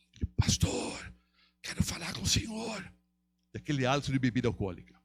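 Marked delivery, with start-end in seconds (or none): 0.4-2.9 slow, hoarse, dysphonic voice. Retelling a man's request to speak with the pastor, imitating a hoarse man. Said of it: "com a voz disfônica, assim".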